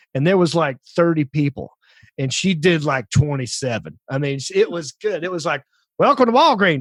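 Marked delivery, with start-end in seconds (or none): 6.0-6.8 put-on Southern accent, pitched up. Imitating a lady greeting customers at the store, in a Southern accent. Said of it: "a Southern accent".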